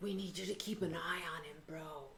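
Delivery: hushed, close, very quiet whisper. Playing Brad, leaning in close to ask someone: whispering in character. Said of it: "whisper and be like".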